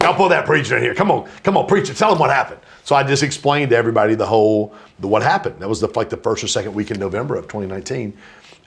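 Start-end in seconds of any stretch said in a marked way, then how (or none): 0.0-2.6 eager, excited, fired-up calling out, pitched up. Retelling how someone called for the preacher on a call: imitating an excited call. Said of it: "He was fired up".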